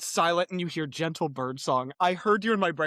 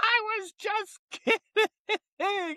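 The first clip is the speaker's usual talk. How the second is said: manic giggle, pitched way up, very high. Describing a scene with Jack and Kenneth, mock manic laughter as Alec Baldwin. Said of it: "manic laughter that Alec Baldwin puts on".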